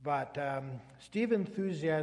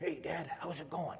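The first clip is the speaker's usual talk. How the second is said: barely-there, very quiet hushed voice; 6 dB quieter than usual. Retelling a son's call to his dad on a walkie-talkie while hunting, very quiet. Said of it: "very quietly said".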